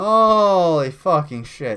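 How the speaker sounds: laughing while talking. Reacting to a clip just played, laughing while talking. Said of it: "I just had to laugh at that".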